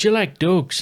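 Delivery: put-on Irish accent, very high-pitched. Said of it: "That's not a bad accent, mate".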